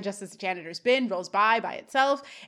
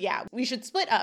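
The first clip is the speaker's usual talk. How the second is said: plain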